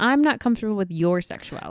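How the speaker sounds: ordinary talk, nothing marked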